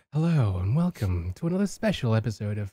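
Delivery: mock-seductive bedroom voice. Mocking how the other speaker talked to the audience, in a mock-seductive greeting. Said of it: "inviting them to bed".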